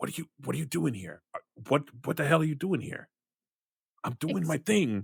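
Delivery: harsh, grating, rough, creaky creature voice. Voicing Krampus, who stops and confronts the players: Krampus voice. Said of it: "and Krampus ... he's like".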